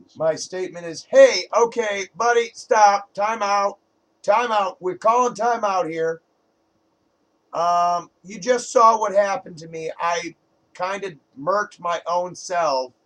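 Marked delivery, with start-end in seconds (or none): 1.1-6.2 loud, carrying calling-out shout. In a game, a player's character calls over to the dot-com warden, shouting. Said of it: "I'm shouting over at the dot-com warden".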